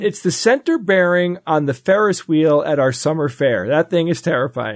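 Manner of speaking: normal talking voice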